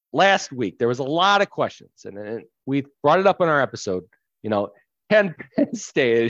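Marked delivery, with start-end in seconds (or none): 5.1-6.3 words breaking up with laughter. Raising a question brought up in last week's episode: laughing while talking. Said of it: "I can't even say it without laughing".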